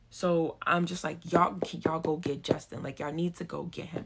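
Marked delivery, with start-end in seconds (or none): 1.3-4.0 imitated angry tone. Retelling telling the doctors to go get justin: retelling an angry demand. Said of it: "'Cause now I'm angry".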